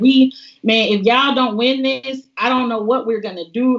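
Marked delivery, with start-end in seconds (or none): none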